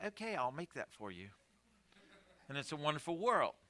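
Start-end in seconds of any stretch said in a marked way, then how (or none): 0.0-1.3 put-on voice assistant voice with a British accent. Describing dictating a grocery list, the speaker voices Siri's reply in Siri's British accent. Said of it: "with her British accent says".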